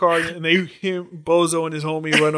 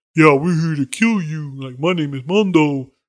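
dim-witted, dumb tough-guy thug voice; 2 semitones lower than usual. Retelling a fight scene, voicing the big stupid thug who talks like an idiot. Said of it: "the one that talks like an idiot is like".

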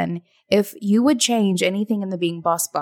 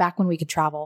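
disdainful tone with a touch of anger; 3 semitones lower, 4 dB quieter than usual. Recalling a trip from back when travel was possible: mock anger and disdain. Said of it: "say it with a little bit of anger, d-, disdain".

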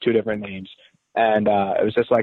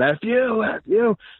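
very high, slow, drawn-out hollering; 11 semitones higher than usual. Recalling trash talking a school when a guy started yelling back; retelling a guy yelling. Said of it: "this one guy starts yelling".

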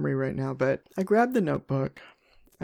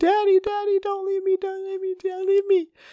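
put-on very high, tearful, wailing little-kid voice; 4 dB louder than usual. Retelling a small child running after his dad, imitating a crying child.

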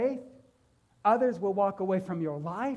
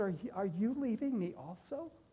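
put-on heartbroken voice, much quieter; 8 dB quieter than usual. Speaking about Jesus and the twelve disciples, acting out Jesus's heartbroken voice. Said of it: "I heard the heartbreak in his voice".

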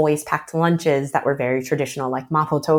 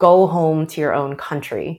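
plain

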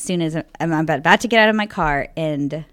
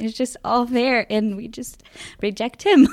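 moved, emotional delivery in a higher voice; 6 semitones higher than usual. Talking about the details of the Eucharist, getting emotional. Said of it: "Sorry, getting emotional".

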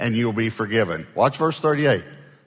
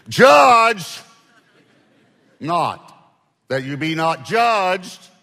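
heavy stress hitting judge and judged hard; 7 semitones higher, 5 dB louder than usual. Rereading the verses to show their subject: strong emphasis on judge words. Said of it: "let me read it one more time and emphasize the word".

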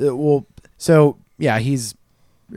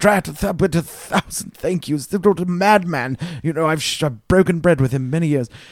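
gushing grateful put-on character voice, much higher; 4 semitones higher than usual. Game master voicing a character who thanks the heroes, gushing grateful character voice.

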